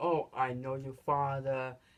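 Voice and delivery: ordinary talk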